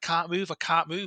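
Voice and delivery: put-on panic-stricken voice, words repeated. Retelling waking unable to move, calling for Roddy: imitating own panicked plea. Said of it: "literally panicking".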